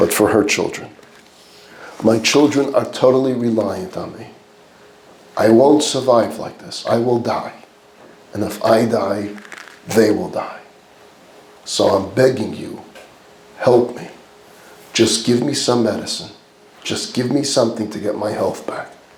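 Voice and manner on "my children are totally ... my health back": mock, desperate, imploring, begging tone. Retelling a mother's plea to a doctor: imitating someone begging. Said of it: "Leah begs the doctor for compassion".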